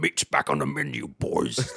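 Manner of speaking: deep, brutish fantasy-monster voice. Recounting a dude who sounded like an orc, quoting him in an orc voice. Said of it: "This dude sounded like an orc".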